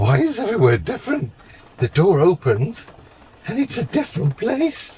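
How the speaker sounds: very high, sing-song, swooping dog voice. Imagining what the dog thinks at each new stop: voicing the dog's thoughts. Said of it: "the look on his face, like".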